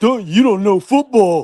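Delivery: high, slow mocking clueless voice. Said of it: "Chris Matthews, saying".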